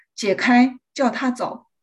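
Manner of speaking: ordinary talk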